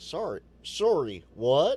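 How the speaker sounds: very loud, attempted, put-on Canadian accent. Reacting to James hitting the button twice, in an attempted Canadian accent. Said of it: "that was my attempt at a Canadian accent".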